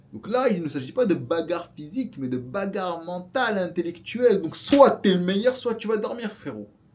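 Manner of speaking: heated, worked-up rant. The speaker addresses the audience, getting worked up. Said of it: "je m'énerve là".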